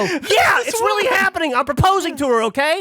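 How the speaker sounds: play-acted, irritated, angry, heated voice. Retelling a public proposal as a bystander questions it: retelling an angry reply. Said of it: "I'm like, angry".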